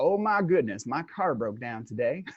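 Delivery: put-on Texas Dallas accent. Giving an example of blaming Satan, the speaker puts on a Dallas accent. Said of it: "That's my Dallas accent".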